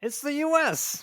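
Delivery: tossed-off, high, sarcastic tone.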